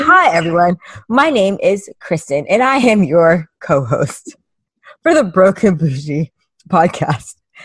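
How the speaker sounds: loud, on-air news-anchor voice. Teasing the co-host about her intro this week, imitating Chrissy as a newscaster. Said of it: "the news station that Chrissy works for".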